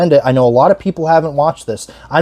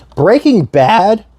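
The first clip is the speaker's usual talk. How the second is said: voice cracks, jumping suddenly high; 6 semitones higher than usual. A speaker explaining how he describes a TV franchise, voice cracking. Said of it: "ignore the voice crack".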